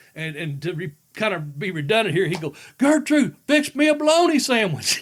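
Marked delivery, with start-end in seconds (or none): 2.8-5.0 very high, loud hollering. Recounting how a man would call out again for food: imitating a yell. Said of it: "he'd yell it out again".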